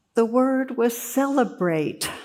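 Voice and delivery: play-acted high, choked-up voice catching in throat. Telling a story, voicing the father's reply to the young man in a retold choking voice. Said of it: "And choking voice, he says".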